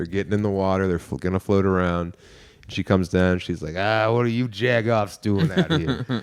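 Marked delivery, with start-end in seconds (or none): 3.8-6.2 put-on little old lady voice. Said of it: "Like a little old woman".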